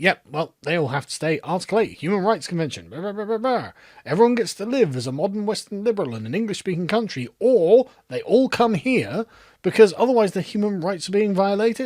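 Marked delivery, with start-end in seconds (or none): none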